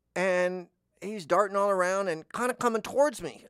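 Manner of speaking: ordinary delivery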